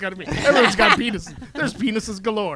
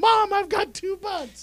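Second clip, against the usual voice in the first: very high, tearful, blubbering crying wail; 12 semitones higher than usual. Retelling a girl running to her mom: imitating someone crying.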